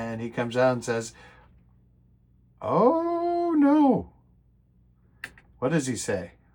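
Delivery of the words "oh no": squeaky high-pitched dismayed voice.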